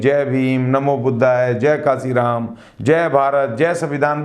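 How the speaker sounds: usual speaking voice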